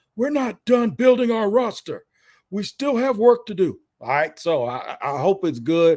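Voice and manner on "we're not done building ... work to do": raspy voice, pitched a touch high. Quoting what was said after the draft: Trent Baalke impression. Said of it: "I'm gonna do my best Trent Baalke impersonation".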